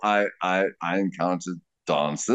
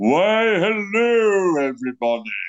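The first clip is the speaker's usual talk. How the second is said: very high, booming theatrical stage actor voice; 12 semitones higher, 3 dB louder than usual. Showing off the actor voice they love using: booming actor voice. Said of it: "You'll hear it booming".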